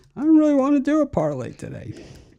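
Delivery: odd, very high, swooping put-on silly voice. Quoting what Al always says on the weekend show, Al put-on voice. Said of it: "I don't know why I did the voice there".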